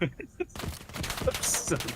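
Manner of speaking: high, breathless, helpless laughing.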